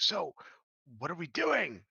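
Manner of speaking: loud stage whisper everyone can hear. Voicing a floating creature who speaks to the party: annoyingly loud whisper. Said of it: "he kinda whispers at you, but it's, it's, like, annoyingly loud".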